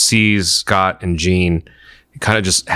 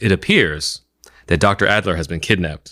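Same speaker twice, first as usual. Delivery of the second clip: play-acted bone-dry, flat, matter-of-fact delivery. Telling a favorite line from an episode, quoting Professor X deadpan. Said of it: "deadpan as can be".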